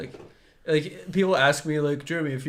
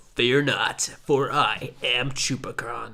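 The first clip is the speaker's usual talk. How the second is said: put-on, combined monster voice; 3 semitones lower than usual. Answering what the combined Chupacabra sounds like: Voltron Chupacabra voice. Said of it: "what's the Voltron Chupacabra sound like".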